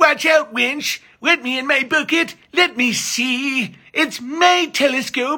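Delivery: very high, little squeaky voice. Showing how the grabbler character talks, Billy Crystal Princess Bride voice. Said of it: "acts exactly like Billy Crystal in A Princess Bride".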